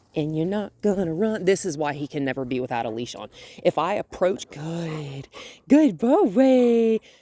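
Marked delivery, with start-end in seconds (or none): 4.5-6.9 cheerful, bright, high-pitched, drawn-out happy voice. Approaching a dog and praising him: happy voice. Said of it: "happy voice".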